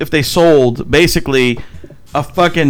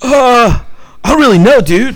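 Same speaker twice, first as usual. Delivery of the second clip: put-on dude voice, much higher pitch; 7 semitones higher, 4 dB louder than usual. Retelling a Guitar Center employee's reply, in a Michelangelo Ninja Turtles voice. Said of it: "He's like Michelangelo from the Ninja Turtles".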